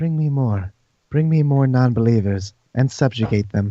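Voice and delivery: whispering voice. Voicing a character in a game who whispers to a player, whispering. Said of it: "Wave whispers to you and says".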